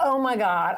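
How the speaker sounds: loud, all-out scream. Retelling a moment after people were shot: imitating own past screaming. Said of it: "I started screaming".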